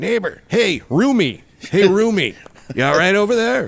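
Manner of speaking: very high, pestering hollering yell. Retelling how a hospital roommate kept calling out: imitating a roommate yelling. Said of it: "he just keep yelling".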